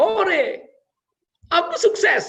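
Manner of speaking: high, loud, joyful shout.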